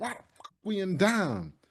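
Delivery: screamed, high, swooping outburst. Retelling a player limping into the locker room: imitating Brian Burns screaming. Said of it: "he was screaming".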